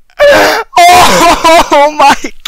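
high, loud, ecstatic triumphant screaming.

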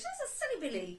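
high, light, tinkling fairy voice. Recalling the voice heard during an Ibogaine experience; tinkly fairy voice. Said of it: "Be like this tinkly fairy voice".

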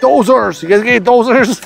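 put-on loud, high-pitched hollering. Retelling a man on a boat coming up to them, retelling a yell. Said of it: "he's yelling".

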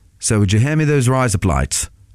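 attempted Australian accent. Showing how razor blades sounds in an Australian accent: attempted Australian accent. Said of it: "I'm not going to do it now, even though I just did".

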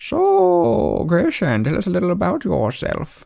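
put-on dull, boring old-man voice, high. A clan chief welcoming a newcomer to the group, boring old man voice. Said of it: "I'm one of the clan chiefs governing this group here. ... boring old man voice".

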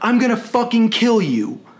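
plain

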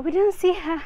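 high, loud, mock complaining voice. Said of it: "all your Karens can report and say".

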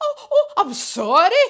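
very loud, high, spluttering. Reading a story character's apology: spluttering. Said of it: "he spluttered".

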